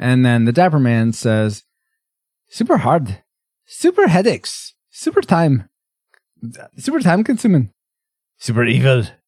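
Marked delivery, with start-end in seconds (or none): 2.5-9.0 bad Irish accent at a much higher pitch. Quoting what the Dapper Man says, in a bad Dapper Man Irish impression. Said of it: "That's a super bad impression".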